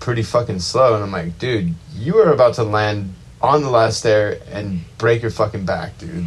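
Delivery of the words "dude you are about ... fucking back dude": normal talking voice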